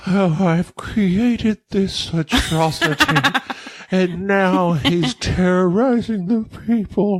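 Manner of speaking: mock weepy, slow, tearful, near crying. Imitating a narrator telling it from his own viewpoint, mock-tearful Doctor Frankenstein voice. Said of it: "he is nearly in tears the whole time ... that's how he reads the whole time".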